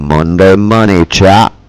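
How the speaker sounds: loud, deep, booming radio announcer voice. Streamer opening the stream with an intro, radio announcer voice. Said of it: "I'll do my radio voice and some sound effects".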